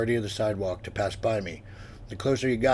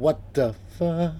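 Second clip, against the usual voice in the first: small, high, frightened whimper; 7 semitones higher than usual. Meaning to sound commanding, the narrator instead blurts it out as a whimper. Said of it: "What came out was a whimper".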